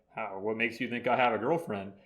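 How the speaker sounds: ordinary delivery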